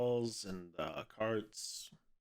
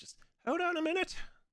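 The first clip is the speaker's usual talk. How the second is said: small, tiny, very high-pitched voice; 4 dB louder than usual. Someone at the back calls out as visitors open the door; small voice. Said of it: "you kind of hear a small voice from the back".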